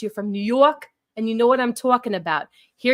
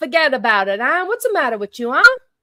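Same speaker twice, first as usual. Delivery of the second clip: put-on Italian New York accent; 3 semitones higher, 4 dB louder than usual. Thanking the audience, the speaker slips into an Italian New York accent. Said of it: "Cannoli is very Italian with his accent".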